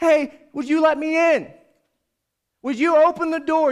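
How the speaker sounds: yelling, loud and high-pitched calling out.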